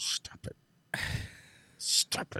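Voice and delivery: acted, cross, angry voice in a whisper. The speaker retells how he scolds the show he stares at, in retold angry scolding. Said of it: "I stare at it angrily".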